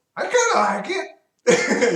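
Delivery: tiny, very high, slow little voice. Narrating a scene, voicing Peebles from inside a barrel: Peebles' small voice. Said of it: "you hear a small voice from inside the barrel go".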